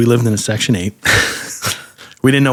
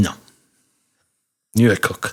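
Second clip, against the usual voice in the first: put-on, dismissive pastry chef voice. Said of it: "He talked like this".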